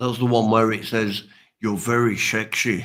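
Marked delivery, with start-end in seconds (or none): 1.6-2.8 Scottish film-star accent. Quoting a dragon that has a Sean Connery voice: Sean Connery voice. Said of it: "a dragon with the voice of Sean Connery ... That's as close as I can do".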